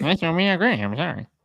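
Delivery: teasing, taunting, silly parrot-like voice. Repeating the other speaker's words to make fun of them: mocking imitation of other speaker. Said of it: "make fun of me in a voice".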